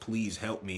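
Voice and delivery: put-on crying child voice. Illustrating empathy for parents, imitating a crying child. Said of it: "in a cry voice".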